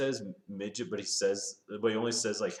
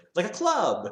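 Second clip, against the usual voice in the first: put-on radio man voice, higher and louder; 9 semitones higher, 6 dB louder than usual. Retelling a movie scene where a character pitches a club: Dan Aykroyd Radio Man voice. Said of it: "he has this great Radio Man voice".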